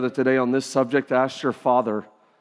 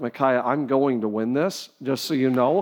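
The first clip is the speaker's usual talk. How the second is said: normal talking voice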